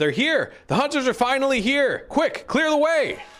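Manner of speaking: very high, rising, carrying shout. Narrating the hunters' boat arriving, voicing a stranger in the crowd: shouting. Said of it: "one of them shouts".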